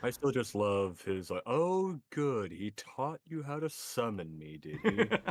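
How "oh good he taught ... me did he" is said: borderline mocking, teasing, sing-song, pitched up. Recalling a character's remark, the speaker imitates its mocking tone. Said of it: "borderline mocking tone".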